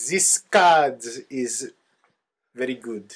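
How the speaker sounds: put-on, fake French accent. Answering whether teaching a card game in French: put-on French accent. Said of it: "I don't know what accent that was".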